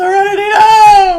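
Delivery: loud, drawn-out high yelling. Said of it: "like, Serenity Now from Seinfeld".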